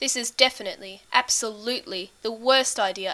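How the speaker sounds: plain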